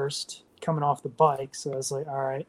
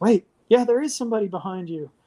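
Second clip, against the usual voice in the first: loud, high-pitched shouting; 6 semitones higher, 5 dB louder than usual. Retelling what a lady shouted near the finish: imitating a lady yelling. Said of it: "a lady yells".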